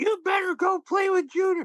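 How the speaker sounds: very high, domineering battle-axe wife voice. Act out one of the characters she would play, imitating a battle-axe wife. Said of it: "play like a battle axe wife who was like".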